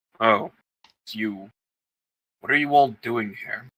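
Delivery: low, deep rumbling voice. The narrator voices someone the group hears greeting them, in a rumbling voice. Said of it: "you hear a rumbling voice and say".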